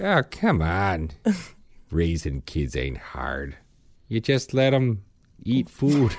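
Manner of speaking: soft Wisconsin-Minnesota northern Midwestern accent. Riffing with others about raising kids, in a northern Midwestern accent. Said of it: "What is this accent?".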